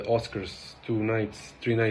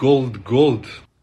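louder mock Serbian accent. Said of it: "That's some Serbian shit".

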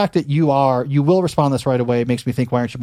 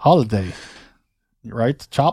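fake, bad English accent drifting into a Russian accent; 3 semitones lower than usual. Speaker showing off a claimed english accent, a bad english accent. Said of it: "No, this is Russian".

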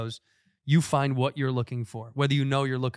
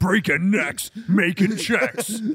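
over-the-top, put-on wrestling promo voice; 7 semitones higher, 6 dB louder than usual. Playing along with the idea of Keanu Reeves in a WWE promo: WWE promo voice. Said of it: "Imagine he broke into a W W E promo".

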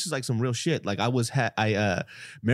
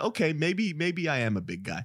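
ordinary delivery

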